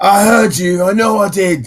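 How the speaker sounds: shouting out. Voicing a guard who hears a noise in a bush: calling out. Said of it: "as he calls out".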